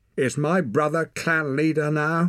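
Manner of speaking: very high, pressing, insistent tone. Reading Ren's line to the clan's men, demanding. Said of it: "she demanded".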